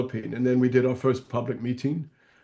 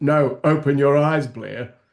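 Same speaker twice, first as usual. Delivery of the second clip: put-on strong, firm voice, slower; 5 dB louder than usual. Speaker retelling what a man said to them, imitating his strong voice. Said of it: "in his strong voice".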